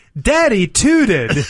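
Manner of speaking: mock loud child voice. Father retells what his daughter suddenly said, retelling a very loud announcement. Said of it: "in a very loud voice says".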